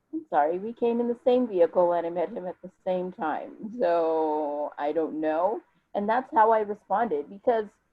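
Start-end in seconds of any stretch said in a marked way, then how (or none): none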